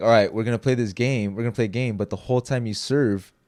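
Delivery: plain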